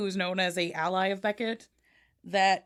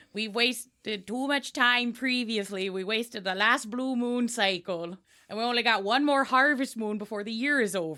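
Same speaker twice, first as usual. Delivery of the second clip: put-on Wisconsin character accent; 2 semitones higher than usual. A game master voicing a character to the players, in a put-on accent. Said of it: "I only got good at that accent".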